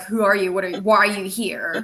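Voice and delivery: ordinary delivery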